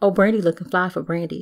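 ordinary talk

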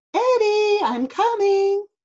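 high, projected calling voice. Narrator reading a story, voicing Mom answering Eddie's cry for help; calling out. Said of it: "called Mom".

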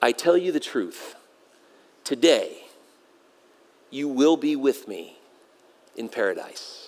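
very low, soft, hushed half-whisper. Retelling Jesus's reply to the thief on the cross, half-whispered. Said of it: "Jesus whispers this third statement".

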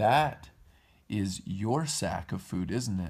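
ordinary delivery

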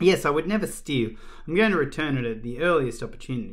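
plain

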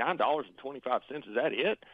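usual speaking voice

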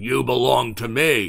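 mock harsh shout. Speaking about the power of sin, voicing it shouting like a slave master. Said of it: "shout out to us like the slave master".

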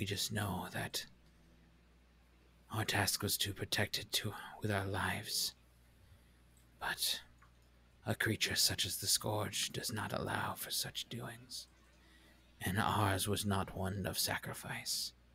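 echoing, echo-like stone creature voice. Voicing one of two boulder-like creatures addressing you; echoing creature voice. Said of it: "You now see as they uncurl themselves from this almost boulder-like form, these two creatures, probably about 6 feet tall each, large, broad shoulders, standing there, stand atop this pile of boulders in front of you. ... And a kind of echoing, booming voice kind of chimes out".

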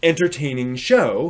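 normal talking voice

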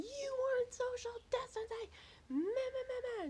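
very high, loud, shrill ranting yell. Retelling a lady who burst in while they did laundry, retelling a lady's yelling. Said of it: "She's yelling".

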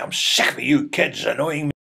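acted man's yell, reined in, rough and creaky. Retelling a man who caught the speaker as a kid, retelling a man screaming. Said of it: "he's screaming".

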